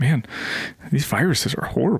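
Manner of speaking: offhand muttering under the breath. Retelling a character's line dropped under his breath: imitating a line under his breath. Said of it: "sort of under his breath and goes".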